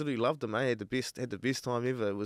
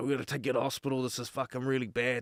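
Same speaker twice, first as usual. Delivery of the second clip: put-on panicked, pleading voice. Retelling how his cousin's flatmate reacted to his hurt leg: acting out panic. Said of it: "He panicked".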